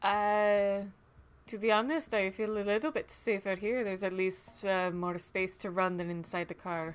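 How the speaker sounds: light chuckle while speaking, soft laugh. Playing a character answering a man who wants to talk in his car, chuckling lightly. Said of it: "I'm gonna chuckle lightly and respond".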